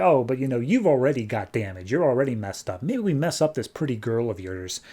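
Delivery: ordinary talk, nothing marked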